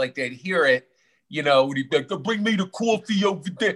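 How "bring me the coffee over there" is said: put-on heavy Brooklyn accent, laid on thick. Speaker imitates their dad, in a thick Brooklyn accent. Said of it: "he had this thick Brooklyn accent".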